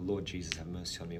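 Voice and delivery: ordinary talk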